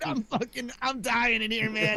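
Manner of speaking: put-on straining voice. Retelling answering a scam call, imitating straining on the toilet. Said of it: "act like you're taking a wicked shit".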